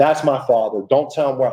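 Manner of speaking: mock frightened, pleading voice, fear in every word. Retelling how a woman reacted on hearing Pittsburgh, imitating a fearful woman. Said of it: "Like fear, you could hear it in her voice".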